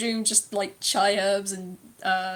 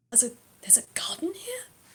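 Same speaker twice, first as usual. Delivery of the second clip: put-on excited mutter, much quieter, higher, faster; 3 semitones higher, 7 dB quieter than usual. Speaker telling the audience what Lao muttered, imitating Lao's excited mutter. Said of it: "he just mutters".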